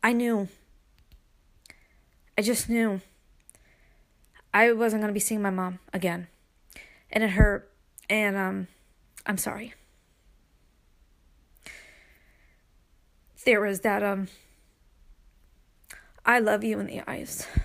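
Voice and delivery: tearful, crying while talking. Remembering saying goodbye to a mother in hospital, crying while talking. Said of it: "I don't mean to cry my podcast".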